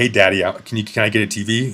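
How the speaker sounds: sweet, coaxing, sweet-talking voice. Imitating a girl asking her man for a tv: sweet-talking. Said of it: "your girl comes up to you and is like".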